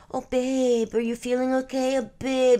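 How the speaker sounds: put-on very high, loud, squeaky baby talk. Mocking how a guy talks to his girlfriend, in a mocking baby voice. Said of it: "Like the baby voice isn't doing anything".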